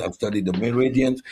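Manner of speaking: ordinary delivery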